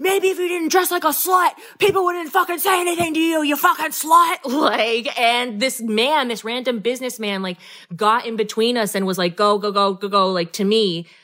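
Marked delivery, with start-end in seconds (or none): 0.0-4.4 very high, rushed, top-of-the-lungs scream. Retelling how a man lunged after the speaker, imitating his top-of-lungs scream. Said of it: "he's screaming at the top of his lungs".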